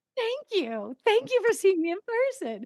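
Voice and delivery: bubbly, very high, rushed, excited gush. Retelling thanking casting people for an in-person audition, own excited thanks. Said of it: ""Why is she so excited?"".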